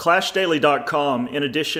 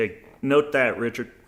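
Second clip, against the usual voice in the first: usual speaking voice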